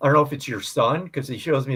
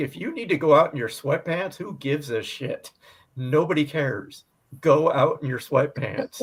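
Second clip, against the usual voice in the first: plain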